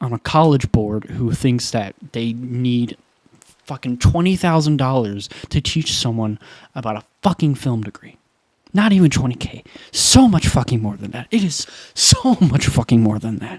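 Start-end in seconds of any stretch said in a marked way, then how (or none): 8.7-13.6 upset, heated, worked-up rant. Venting mid-monologue, a little upset. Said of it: "sorry I'm getting a little upset".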